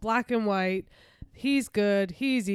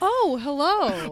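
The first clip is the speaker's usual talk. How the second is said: startled, high-pitched, caught off guard; 6 semitones higher, 4 dB louder than usual. One host acts out the other host's new intro, mock-startled. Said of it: "acted as if you just, like, got caught".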